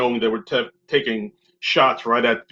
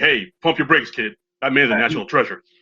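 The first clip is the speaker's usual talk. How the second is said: put-on upset, actor-like voice. Retelling a movie fight scene, imitating Kirk Lazarus getting upset. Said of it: "And then Kirk got all upset".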